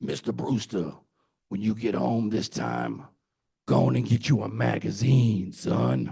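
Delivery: rough, gritty creak on every word. Retelling what Lomax told him when he asked for advice, imitating Lomax's voice. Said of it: "because he had that voice".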